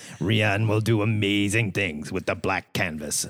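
low, sinister, evil-sounding voice. Reading out a quote from the president of Lucasfilm: Kathleen Kennedy impression. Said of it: "Why does she sound like that?".

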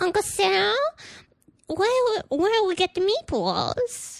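put-on very high, tiny, childlike little girl voice. Retelling what the little girl says in a voice game: imitating a little girl. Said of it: "she'll be like".

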